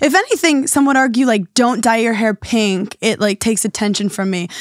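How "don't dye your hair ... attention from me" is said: ordinary delivery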